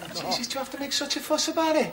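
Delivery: put-on Liverpool Scouse accent, arguing and bickering. In a comedy sketch, arguing over a cup of tea: scouse accent. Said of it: "It's the accent".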